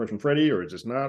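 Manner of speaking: plain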